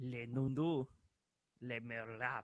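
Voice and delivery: clumsy, slow, bad put-on French accent. Reading French creature names aloud to the others: bad French accent. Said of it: "My French accent sucks".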